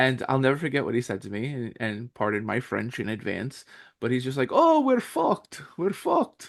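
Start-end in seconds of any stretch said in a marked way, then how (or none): 4.5-6.5 put-on very high, slow, heavy thick Bulgarian accent. Retelling what a man said on hearing a voice actor quit, thick accent like the Count. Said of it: "he sounds like the Count from uh Sesame Street because he's got like that thick".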